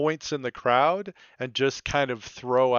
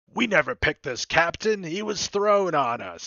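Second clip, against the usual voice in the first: put-on stirring rallying cry, pitched high but held back; 5 semitones higher than usual. Voicing a bosun turning the crew toward mutiny: screaming to the crew. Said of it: "he starts screaming to the crew".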